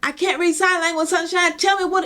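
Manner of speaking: put-on screaming. Retelling how she talked to a bird at her window: imitating her own screaming. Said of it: "I'm screaming at her now".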